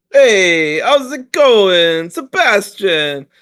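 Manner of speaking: very high, clumsy, bad put-on Italian accent. A podcast co-host greets the host, in a really poor Italian accent. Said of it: "that's my really poor attempt at an".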